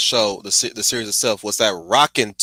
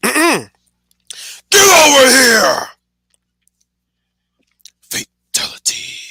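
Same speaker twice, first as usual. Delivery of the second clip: loud shout, much higher and louder; 7 dB louder than usual. A streamer warns chat it will be loud, then shouts: loud shout. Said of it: "this is going to be loud".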